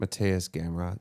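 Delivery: said very sleepily, in a drowsy tone. Naming the replacement fighter for an unwanted bout: said very sleepily. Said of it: "I like how you said that very sleepy".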